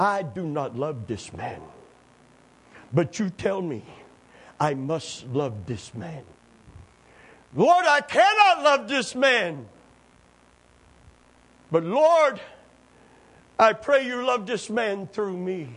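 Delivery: put-on broken, sing-song Dutch accent. Preacher retelling a woman's prayer, in a broken Dutch accent. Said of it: "She prayed in her Dutch broken accent".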